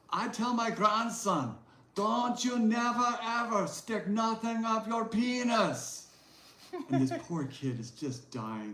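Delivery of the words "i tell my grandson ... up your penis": put-on very high, slow elderly woman's accent. At a book signing, retelling what an elderly woman said, imitating her accent. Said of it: "with her accent".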